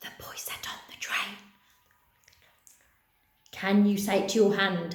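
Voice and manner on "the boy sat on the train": very quiet, hushed, barely-there whisper. Leading a repeat-after-me game, whispering the sentence to mums and dads; whisper. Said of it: "whisper that to your mums and dads".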